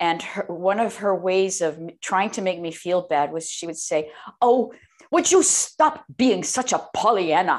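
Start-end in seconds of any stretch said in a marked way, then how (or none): 4.4-7.6 cross, nagging, angry scolding with swooping pitch. Retelling how the mother scolded for being cheerful: imitating angry mother scolding. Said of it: "And she would get so angry".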